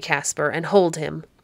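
plain reading voice

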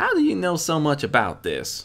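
blunt, icy, cold demanding tone, swooping pitch. Narrator reading Applejack questioning the stallion, Applejack demanding coldly.

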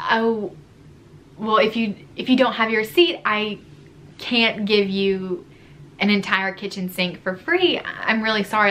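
usual speaking voice

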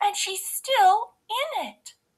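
very high, crying-out voice. Baby Bear runs to his room and finds his bed occupied, crying out. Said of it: "cried Baby Bear".

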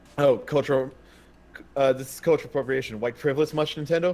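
ordinary delivery

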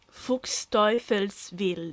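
Fuchsteufelswild sounded out slowly, with careful deliberation. Asked to pronounce a word for listeners, slow 'Fuchsteufelswild'. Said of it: "lo dico lentamente".

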